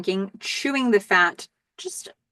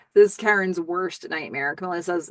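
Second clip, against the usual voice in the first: ordinary delivery, nothing marked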